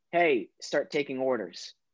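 normal talking voice

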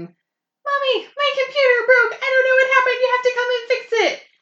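put-on shrill, very high, very loud child screaming. Retelling what the kids shout when the computer breaks: imitating kids screaming. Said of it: "the kids scream".

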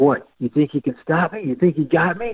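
high, goading, challenging, taunting yell. Retelling yelling at tree branches while dragging a canoe: imitating his own yelling. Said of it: "I started yelling at the branches".

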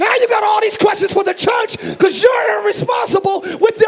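high-pitched, loud yelling. Preaching about questioning church finances, yelling. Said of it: "let me stop yelling".

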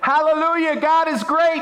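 very high, loud, joyful rejoicing yell. Retelling a joke where a boy praises God: imitating a boy yelling. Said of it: "he was yelling even louder than before".

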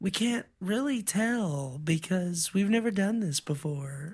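ditzy, grating, high airhead voice, "tell" stretched out. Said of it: "she probably actually had the most annoying voice".

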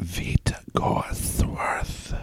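very slow, breathy whisper in a character voice. Introducing a player character to the table: whispering in character. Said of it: "Do you whisper the whole time?".

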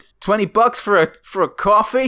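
very high, put-on New York accent. Trying out accents with the others, the speaker does a line in New York accent. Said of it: "that's pretty New Yorkish".

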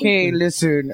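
dry, flat put-on voice. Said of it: "I'm just doing Lorne Michaels from Saturday Night Live".

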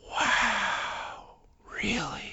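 stunned, amazed whisper under the breath, to himself. Retelling a man seated nearby hearing qa stories, imitating his stunned under-breath muttering. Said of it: "I could hear him under his breath going".

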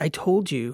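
sharp, angry voice. Reading Lita's reply to Soch's question, angry. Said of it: "she said angrily".

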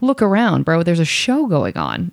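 acted fed-up, annoyed tone with swooping pitch. Retelling a reply to a customer who wanted cigarettes: imitating own annoyed retort. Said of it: "I was so annoyed".

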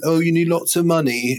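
put-on British accent. Retelling what the sellers said about buying the building: imitating landlord in british accent. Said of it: "You did their accent?".

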